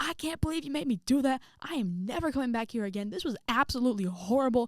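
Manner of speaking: high, furious, angry screaming. Retelling leaving the school, screaming in the parking lot: imitating herself screaming. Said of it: "screaming in the parking lot".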